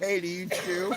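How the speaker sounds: loud, hollered yelling. Retelling how the neighbor called across the yard: imitating someone yelling across a yard. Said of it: "he fucking yells across the yard".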